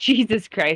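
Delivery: plain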